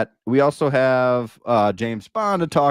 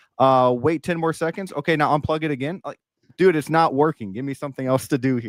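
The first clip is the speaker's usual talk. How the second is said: normal talking voice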